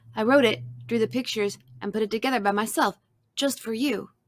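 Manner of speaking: ordinary delivery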